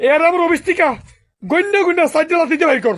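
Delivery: furious, loud yelling.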